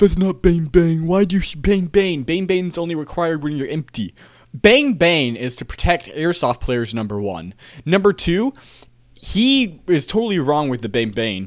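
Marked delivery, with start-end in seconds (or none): 0.0-4.1 put-on yelling, much higher pitch. Streamer quotes a guy in the comments yelling at 33rd Virginia, imitating a yelling commenter. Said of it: "a guy in his comments yelling at him like".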